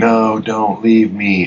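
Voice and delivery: long, high, drawn-out screaming cry. Recounting a scene to a listener, acting out a character's scream. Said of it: "he's screaming".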